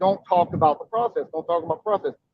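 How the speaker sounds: ordinary talk, nothing marked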